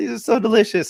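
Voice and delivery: high, gushing woman's voice.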